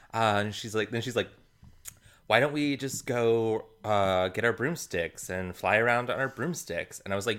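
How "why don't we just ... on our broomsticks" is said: ordinary talk, nothing marked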